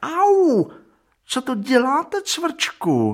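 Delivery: very high, startled, surprised yelp. A chair cries out as a woodworm bites its seat; surprised yelp. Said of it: "Vyjekla židle překvapeně".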